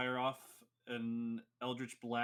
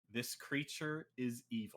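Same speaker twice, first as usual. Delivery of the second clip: slow, hushed, secretive whisper. Narrating Butter landing on a player's shoulder and speaking next to their ear: whispering. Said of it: "whispers to you".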